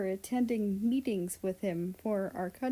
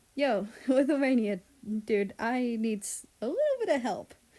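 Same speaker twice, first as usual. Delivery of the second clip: put-on, forced cheery brightness, sing-song; 4 dB louder than usual. Reading a story aloud, phoning someone to ask for help: trying to sound cheery. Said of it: "trying to sound as cheery as possible".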